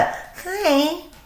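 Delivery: put-on very high, soft little teeny bopper voice. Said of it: "the little teeny bopper voice".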